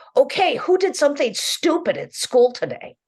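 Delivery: very high, loud, swooping sing-song voice. Retelling how a mother opened dinner talk with her kids: imitating a mother's dinner-table tone. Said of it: "In just that kind of tone of voice".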